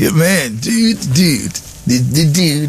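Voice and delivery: laid-back LA dude voice. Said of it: "That's how he talks".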